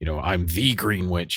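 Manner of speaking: deep put-on demon voice. Describing a favorite part of an episode, imitating Aubrey Plaza's demonic voice. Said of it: "in like a, a demonic voice".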